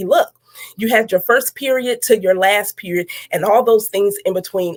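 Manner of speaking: usual speaking voice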